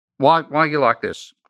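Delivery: chopped-up staccato English phrasing. Retelling what a wife said on walking in: imitating wife's staccato english. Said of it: "she speaks in a staccato English".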